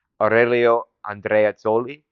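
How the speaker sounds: careful Italian-accented pronunciation of the name.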